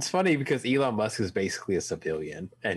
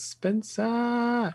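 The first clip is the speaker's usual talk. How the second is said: put-on high-pitched old man voice with Chinese accent. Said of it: "He sounds like Jackie Chan".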